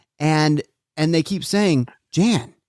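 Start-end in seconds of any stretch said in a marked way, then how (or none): none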